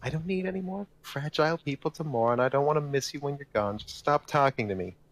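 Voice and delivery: shrill, piercing, high-pitched voice. Narrating a woman who sighs and snaps at people greeting her: shrill voice. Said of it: "says in a shrill voice".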